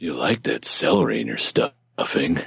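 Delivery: creepy put-on character voice. Joking about Thanksgiving stuffing: creepy Uncle Tickle voice. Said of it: "Damn it, Uncle Tickle".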